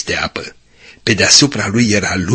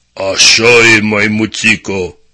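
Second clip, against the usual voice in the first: big, thick, heavy voice; 3 dB louder than usual. Narrator reads a story; a voice behind the frightened monkey answers: thick deep voice. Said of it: "a spus o voce groasă".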